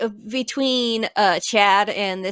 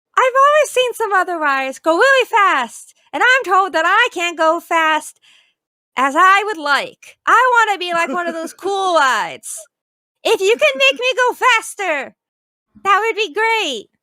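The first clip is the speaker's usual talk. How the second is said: very high-pitched, loud, goofy funny voice; 10 semitones higher, 5 dB louder than usual. Speaker gives a teacup ride its own voice: funny talking-ride voice. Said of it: "I have to give this ride a funny voice".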